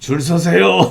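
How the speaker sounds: put-on deep voice. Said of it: "그 굵은 목소리로".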